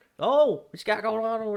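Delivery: loud, very high-pitched hillbilly holler. Retelling a TV scene where a neighbor gets in the gator pool: hillbilly voice. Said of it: "there's this fucking hillbilly that's".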